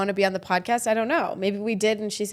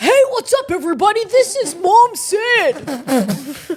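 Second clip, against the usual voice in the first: very high-pitched, loud voice; 10 semitones higher, 8 dB louder than usual. Greeting everybody while doing an impression of Gabe: Gabe impression. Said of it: "That's my breast impression of Gabe".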